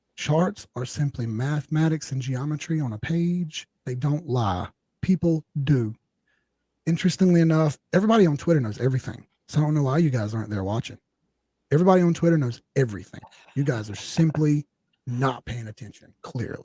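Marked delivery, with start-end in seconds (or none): 6.9-16.7 thick, heavy, dripping sarcastic tone. Speaking to the viewers, then owning up to it: heavy sarcasm. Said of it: "that's me being hella sarcastic".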